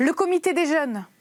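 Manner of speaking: sudden, high, loud shout. Reading a story, someone in the group proposes a name: shouting. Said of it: "quelqu'un crie".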